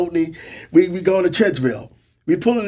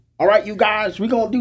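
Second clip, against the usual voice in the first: put-on southern drawl, pitched higher; 5 semitones higher than usual. Telling stories about the maintenance control chief, imitating Cromwell's southern drawl. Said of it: "southern draw accent".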